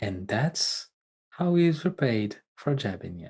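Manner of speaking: low, hushed, confiding stage whisper. Voicing a character who leans in to another's ear: half-whispering in character. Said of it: "he whispers to, to Theo's ear".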